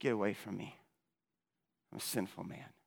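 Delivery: soft, low, humbled tone.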